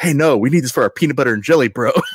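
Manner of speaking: loud, high mock bro shout.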